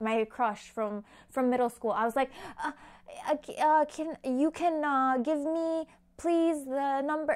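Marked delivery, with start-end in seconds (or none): 2.6-7.4 mock flustered, high, halting stammer, words falling apart. Retelling a nervous phone call asking for a number: imitating own nervous stammering. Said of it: "I lost the English language".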